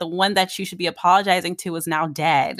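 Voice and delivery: ordinary talk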